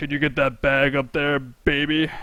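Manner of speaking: low, deep, manly put-on voice. Acting out a shop scene, speaker voices the customer asking for a bag; deep voice. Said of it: "Deep voice".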